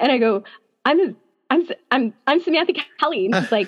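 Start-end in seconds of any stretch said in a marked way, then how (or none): 0.8-3.3 put-on nervous stutter, higher pitch. Retelling stepping up to meet her in a photo line: imitating own nervous stuttering. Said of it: "I started stuttering 'cause I was sort of nervous".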